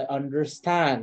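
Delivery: emphasizing 'understand'. Retelling what a woman taken for the Lord Protector says, stress on 'understand'. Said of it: "emphasis on understand".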